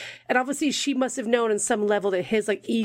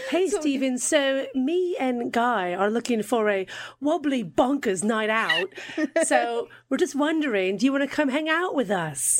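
put-on English-American Mid-Atlantic accent; 3 semitones higher than usual. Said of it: "that Mid-Atlantic accent".

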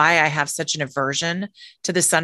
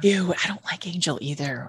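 soft, hushed, fearful half-whisper; 6 dB quieter than usual. Agreeing about disliking a popular perfume: half-whispering. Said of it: "I know we're whispering".

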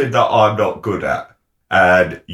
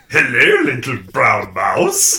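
put-on monster voice with a sing-song Swiss accent; 2 semitones higher than usual. Father retelling reading to his seven-year-old son, in a Swiss Gruffalo voice. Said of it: "Swiss Gruffalo".

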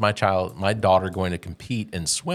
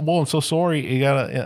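put-on Canadian accent, much higher; 7 semitones higher than usual. Acting out a player in rec sports, in a Canadian impression. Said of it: "my best Canadian impression".

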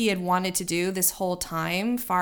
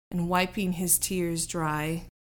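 plain reading voice

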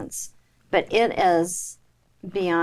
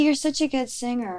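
normal talking voice

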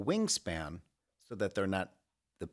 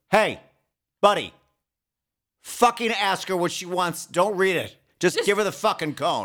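put-on very loud, high, shrill old-time New York accent; 11 semitones higher, 11 dB louder than usual. Act out what someone would say to a parent ordering a cone, in an old-time New Yorker voice. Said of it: "like an old time New Yorker would be like".

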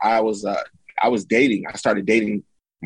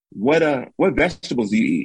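heavy put-on Jamaican accent, higher; 4 semitones higher than usual. Quoting a jamaican woman's question to the speaker, heavy jamaican accent. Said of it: "She got a hard accent".

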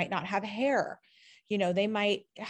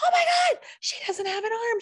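put-on child scream, higher and louder; 5 dB louder than usual. Retelling a moment at a grocery store: imitating a child screaming. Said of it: "I hear my son screaming".

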